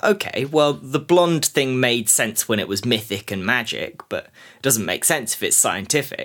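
ordinary talk, nothing marked

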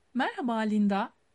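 ordinary delivery, nothing marked

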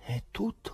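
soft, murmured, whispered under the breath. A man pauses before announcing the name, whispering to himself. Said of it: "sussurrò Pilato tra sé".

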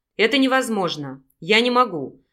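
plain

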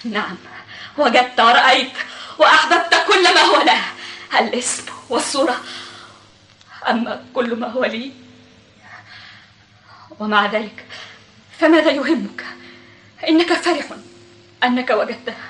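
crying through words, tearful, halting, broken phrases. In a drama, a woman answers a man who then asks if she's crying: crying while speaking. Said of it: "أتبكين؟".

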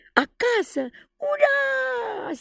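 very high shouted unison cheer, "ura" stretched. Two children cheer together on hearing they are going home, shouted in unison. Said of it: "Strigară într-un glas Michael și John".

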